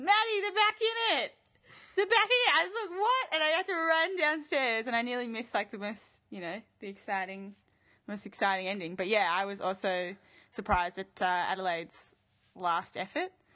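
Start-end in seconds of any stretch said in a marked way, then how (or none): 0.0-2.5 high-pitched, shrill yell, pitched way up. Retelling her brother calling her back downstairs, retelling his scream. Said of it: "my brother screams like".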